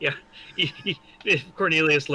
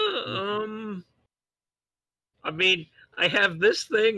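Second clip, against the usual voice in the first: very slow, high words through clenched teeth; 5 semitones higher than usual. Acting out a hesitant in-character reply to another character: through gritted teeth. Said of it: "kinda gritting my teeth".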